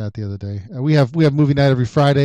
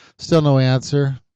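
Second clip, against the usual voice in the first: normal talking voice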